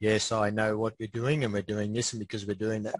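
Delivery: low, flat, droning monotone. Imitating the other speaker's admin way of talking, in a monotone. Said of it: "your voice goes monotone when you".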